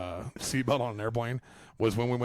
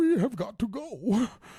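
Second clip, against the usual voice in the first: slow, very high put-on voice, every word stretched; 12 semitones higher, 4 dB louder than usual. Quoting a movie scene about being strapped to someone: Bane voice. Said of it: "do it like Bane at the beginning".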